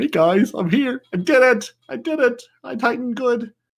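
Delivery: dopey, very high, slow and drawn out. Voicing a game character in a trailer screenshot: derpy Titan voice. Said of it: "the Titan being like".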